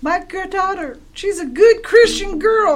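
very high voice bursting into tears. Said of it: "Juanita Moore bursts into tears".

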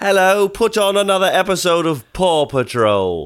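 slow, drawn-out, high-pitched English accent. Showing how they ask the TV for a show: English accent. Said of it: "it's mostly English".

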